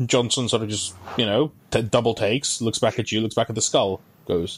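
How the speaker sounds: usual speaking voice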